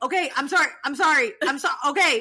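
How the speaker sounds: loud, repeated over and over, cut short. Retelling a scene where Jax is yelled at and wants to hang up: imitating Jax apologizing while yelled at. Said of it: "the scene of him is just going".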